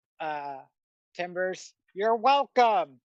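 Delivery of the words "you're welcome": calling out loudly across a distance. Voicing a character who dusts her hands off and smiles: calling out loudly. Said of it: "and then calls out to".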